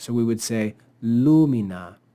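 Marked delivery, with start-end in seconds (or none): 1.0-1.9 lumina with stress on first syllable LU. Latin lesson on accent placement: stress on first syllable, lu, of lumina. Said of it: "the word lu-mi-na would be accented on the antepenult".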